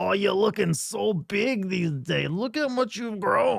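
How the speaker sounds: rough, raspy, strained voice. Imitating a longtime smoker aunt, strained smoker-aunt voice. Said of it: "that kind of strained voice".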